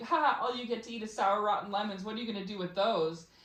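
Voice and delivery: scornful, laughing, jeering ridicule. Retelling how others laughed at the listener: imitating someone laughing mockingly. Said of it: "they were laughing like".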